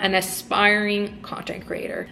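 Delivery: ordinary delivery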